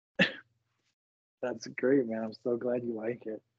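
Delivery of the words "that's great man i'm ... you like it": laughing, sarcastic praise. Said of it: "I detect a little bit of sarcasm".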